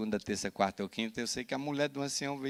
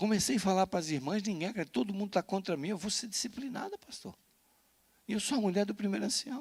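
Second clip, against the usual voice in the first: put-on tearful, pleading crying, higher pitch; 8 semitones higher than usual. Retelling how a church member pleaded with the pastor: imitating a woman crying. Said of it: "E ela chorava assim".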